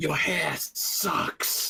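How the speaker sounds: hateful, spiteful whispered voice. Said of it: "I'm just whispering".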